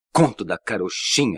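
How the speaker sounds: forceful exclamation. Alan turns suddenly to the narrator and repeats his words: exclaiming.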